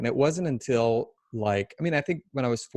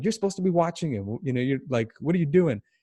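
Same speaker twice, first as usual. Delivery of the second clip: mock yell, imitated, pitched higher; 4 semitones higher than usual. Retelling how a big, angry guy at the gym yelled at another man: retelling a yell. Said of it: "he yelled at him like".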